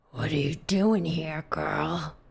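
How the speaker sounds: rough, low, gruff, raspy voice. A narrator voices someone speaking right over the listener's shoulder, gruff voice. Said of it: "a gruff voice behind you says".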